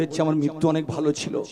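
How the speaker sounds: usual speaking voice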